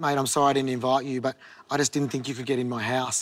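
plain

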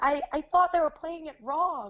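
put-on American girl's accent. Retelling what an American girl asked: imitating an American accent. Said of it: "your American accent was, like, on point".

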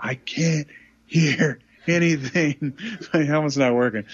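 put-on yell, called out high and slow. Retelling yelling across to a teammate about the helmet: imitating own past yelling. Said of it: "I'm literally yelling at".

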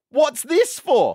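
play-acted, loud, high-pitched voice projected to everyone. Retelling how the pharmacist read the script: imitating someone asking loudly. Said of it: "she goes out loud".

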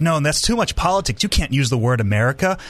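ordinary talk

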